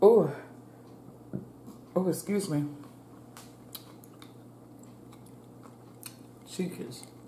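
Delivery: talking with mouth full. Eating on camera, talking to viewers while talking with food in mouth. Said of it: "I have food in my mouth".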